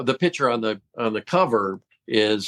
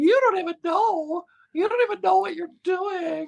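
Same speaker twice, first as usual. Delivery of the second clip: shrill, very high, deliberately terrible put-on woman's voice. Speaker shows the voice people call the Shirley voice, imitating Shirley's voice. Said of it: "my you know terrible imitation of her voice".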